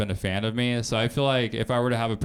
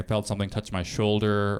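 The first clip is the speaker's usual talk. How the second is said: ordinary delivery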